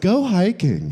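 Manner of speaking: light, playful, whimsical delivery. Retelling how someone answered a question: imitating a whimsical delivery. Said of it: "You have to say it whimsically".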